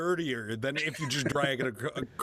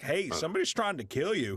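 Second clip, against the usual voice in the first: plain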